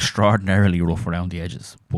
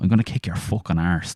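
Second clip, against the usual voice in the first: Irish pronunciation. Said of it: "He would have said".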